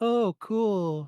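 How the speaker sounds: put-on flat, unimpressed voice with zero emotion. Retelling how the girls in a video reacted to a creature: imitating a voice with no emotion. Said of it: "no emotion in their voice whatsoever".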